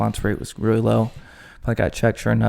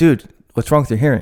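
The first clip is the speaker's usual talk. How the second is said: loud, snapped delivery with mock frustration; 3 semitones higher, 7 dB louder than usual. Retelling the other speaker's reply about hearing: imitating someone snapping back. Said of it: "And you snapped".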